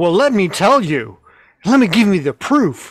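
play-acted, coldly angry tone. Retelling how the other speaker just sounded: imitating a cold angry tone. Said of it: "You just did the tone".

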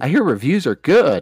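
sarcastic. Previewing the last movie release of June, sarcastic. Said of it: "Is that sarcasm".

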